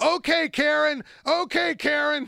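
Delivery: put-on very slow, high, stretched-out yelling. Telling how a man yelled at a woman during a dispute: retelling a yell. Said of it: "And then he starts yelling".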